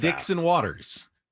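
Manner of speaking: fast, run-together, slightly high delivery. Repeating a last name when asked to say it fast: said fast. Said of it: "just say the last name fast".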